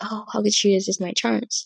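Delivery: put-on cocky, preening, full-of-himself show-off voice. Imitating how the book's male main character speaks: imitating a cocky character. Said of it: "he's very cocky".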